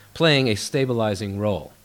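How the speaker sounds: ordinary talk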